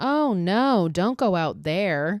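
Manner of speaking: acted indifferent tone, very slow and drawn out. Recounting a scene where Maggie runs out screaming; retelling Jessica's monotone line. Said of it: "in the most monotone voice".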